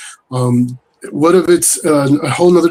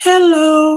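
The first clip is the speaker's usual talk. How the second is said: put-on very high, tiny little child's voice; 13 semitones higher than usual. Retelling a disembodied voice heard during a tattoo session: imitating a little kid's voice. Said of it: "it sounded like a little kid said".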